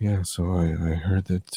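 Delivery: very quiet, low, soft mumbling speech.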